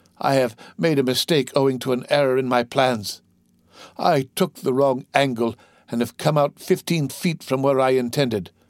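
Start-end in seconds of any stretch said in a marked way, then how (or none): none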